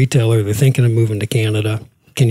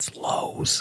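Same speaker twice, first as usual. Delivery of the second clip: mock whisper under breath, much quieter. Telling how he leaned to someone in a meeting, retelling a whisper under breath. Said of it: "I kind of whispered under my breath".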